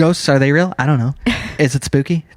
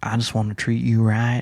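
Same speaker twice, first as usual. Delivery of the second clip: gentle, soft put-on Southern US accent; 4 semitones lower, 5 dB quieter than usual. Imagining a handsome man walking up to someone, southern accent. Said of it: "having a southern accent".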